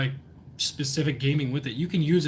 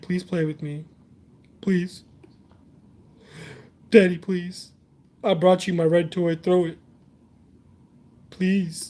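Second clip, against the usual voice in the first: pleading sad puppy voice, higher and louder; 3 semitones higher, 5 dB louder than usual. Voicing a puppy that brings his toy: voicing a sad begging puppy. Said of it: "Look how sad he looks".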